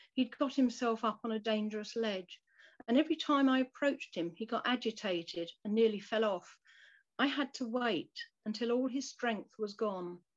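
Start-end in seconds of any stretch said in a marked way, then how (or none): none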